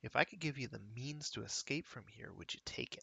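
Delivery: soft, low muttering under the breath. Narrating a game, voicing a character pressed close to a pen's gate: muttering. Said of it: "he mutters to".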